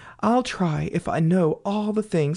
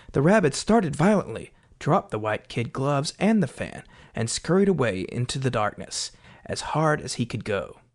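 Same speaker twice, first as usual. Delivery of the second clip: ordinary delivery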